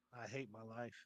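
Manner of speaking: very low, soft, hushed mutter under the breath. Reacting in character to a drunk who looks like Sora: said under the breath. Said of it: "I say under my breath".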